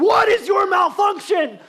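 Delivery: very high, very loud, shrill, drawn-out scream. Recounting yelling at a device that won't work: retelling a scream. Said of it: "I'm screaming".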